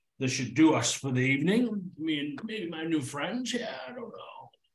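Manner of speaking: fake tipsy slurring voice. Voicing a drunken older man greeting travelers at the bar: put-on drunken slur. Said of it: "He's slurring his words".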